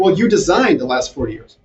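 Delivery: ordinary delivery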